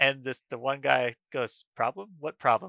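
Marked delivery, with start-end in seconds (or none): 1.8-2.7 acted, totally serious, no laugh in it. Retelling a friend's reply to a teacher: imitating a straight-faced reply. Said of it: "With a straight face".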